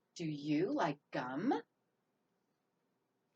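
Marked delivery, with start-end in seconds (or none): 0.2-1.7 slow rising tune on the word gum. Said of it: "Can you hear my voice go up at the end?".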